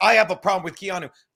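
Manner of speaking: put-on arrogant tone. Retelling a caller on the show: imitating an arrogant tone. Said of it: "the arrogant, like, "How dare a woman fucking talk about me" tone".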